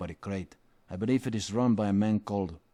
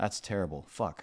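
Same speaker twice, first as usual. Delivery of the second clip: ordinary talk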